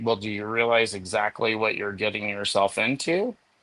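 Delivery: plain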